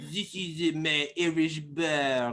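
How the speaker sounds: slow, hammy put-on French accent, "bar" drawn out. Describing an irish bar: put-on french accent. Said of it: "That's my French accent".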